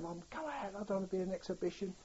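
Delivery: high-pitched shouting. Recounting being ill in bed, the speaker re-enacts shouting to their mum. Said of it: "I was just shouting".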